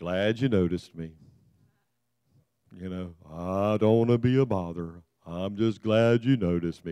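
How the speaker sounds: very low, sunken, put-on character voice. Speaker describing the Winnie the Pooh characters, doing an Eeyore voice. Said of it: "Eeyore was the one that always was just".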